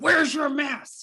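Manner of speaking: loud, shrill, aggressive, blurted, angry voice. Retelling what a woman on a night flight blurted out: imitating an angry demand. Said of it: "really angry, very aggressive".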